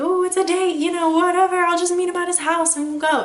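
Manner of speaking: high, excited and giddy gushing. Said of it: "get excited and giddy like".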